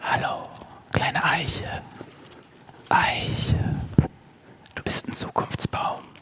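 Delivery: cozy, soft, breathy close-mic whispered murmur. Copying digital conference speakers, talking to a little oak tree, soft and cozy close to the mic. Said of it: "so kuschelig ins Mikrofon sprechen. Das mache ich jetzt für euch auch mal so".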